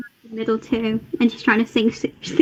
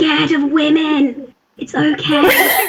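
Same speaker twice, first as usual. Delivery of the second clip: theatrical stage whisper; 3 semitones higher than usual. Tweaking another character's jacket during the game, teasing him in a stage whisper. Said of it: "like stage whisper".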